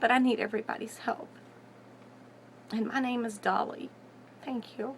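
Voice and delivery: tearful voice. Pleading to everyone for help with a friend's case, crying. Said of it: "I'm sorry I'm crying".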